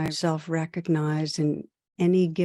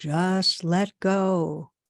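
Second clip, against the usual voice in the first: play-acted divine voice, as from the heavens above. Telling a story where a man calls out for help, booming voice of God. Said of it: "And then there's another booming".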